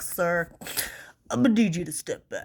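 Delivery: mock stuffy, congested head-cold voice. Speaker imagining a crossing guard with a head cold, imitating a crossing guard with a cold. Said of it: "have a head cold".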